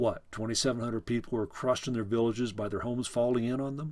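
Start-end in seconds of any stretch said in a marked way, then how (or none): none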